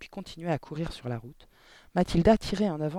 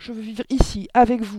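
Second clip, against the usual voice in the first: loud, high, pleading cry at full volume; 6 semitones higher, 9 dB louder than usual. Mathilda answers Mademoiselle Candy; cried out. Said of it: "cria Mathilda".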